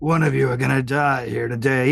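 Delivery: put-on monster voice. Voicing a creature that threatens the party: in Wargrim's voice. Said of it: "he says in Wargrim's voice".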